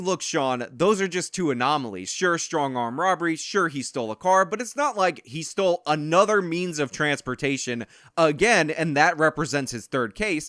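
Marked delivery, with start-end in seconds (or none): none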